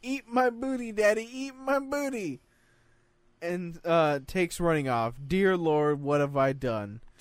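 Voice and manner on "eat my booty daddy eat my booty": put-on very high child yelling. Reading a story about a child who jumps off the couch: imitating a child yelling. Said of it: "starts yelling".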